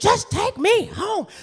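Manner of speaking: shrill, very high, loud screaming. Recounting what he screamed after getting in the car, retelling his screaming. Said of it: "he's just screaming".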